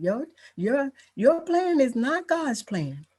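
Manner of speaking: gentle, sweet, very high voice. Quoting what her mother would always say to her, imitating mom's sweet voice. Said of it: "her sweet voice, she would say".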